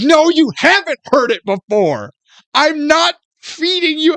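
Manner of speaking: very high, heated, angry protest. Retelling an argument with a man convinced the speaker is lying, retelling own angry reply. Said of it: "So now I'm getting mad".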